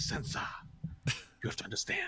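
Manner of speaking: soft, breathy, barely voiced whisper. Quoting the character from the show again: Peter Baelish impression. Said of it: "he's like".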